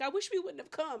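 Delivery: high, crying voice, through tears. Retelling how one person cried to Miranda: imitating someone crying. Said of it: "walks over to Miranda and starts crying".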